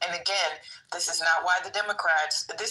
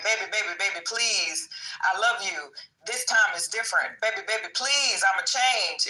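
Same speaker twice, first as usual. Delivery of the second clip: sweet-talking, coaxing, pleading, begging voice; 2 semitones higher than usual. Acting out the Republicans as a partner begging to be taken back: imitating a pleading lover. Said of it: "The Republicans are like".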